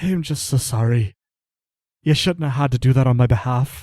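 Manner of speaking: loud, full-on, tearful sobbing through the words. A narrator voices a man apologizing after he breaks down, full-on crying. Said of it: "now he's full on crying".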